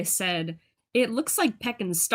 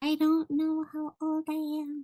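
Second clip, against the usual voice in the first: tiny, high, small shrunken little voice; 6 semitones higher, 4 dB quieter than usual. Acting out what someone said when asked their age, in a tiny voice. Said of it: "They say it in a tiny voice".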